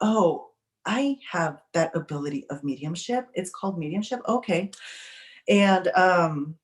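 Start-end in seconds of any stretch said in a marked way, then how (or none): none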